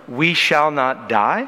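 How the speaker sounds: die lifted with a questioning rise. Reading a Habakkuk verse as a question: rising question intonation on die. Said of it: "You hear the inflection of the voice? Yeah, it should be a question".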